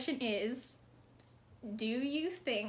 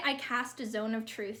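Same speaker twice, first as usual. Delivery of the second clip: ordinary talk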